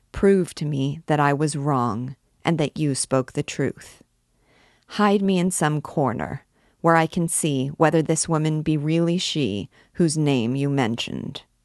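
ordinary delivery

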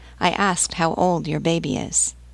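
ordinary delivery, nothing marked

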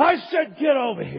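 high, loud, angry yell.

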